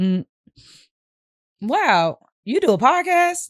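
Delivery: put-on surprise, slow, high, drawn out. Demonstrating emotions for a podcast take, starting with surprise: surprised. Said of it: "So we're gonna do it like surprise".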